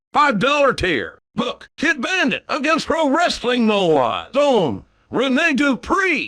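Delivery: high, swooping, mechanical robot announcer voice. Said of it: "We're reading these in Robot J R's voice".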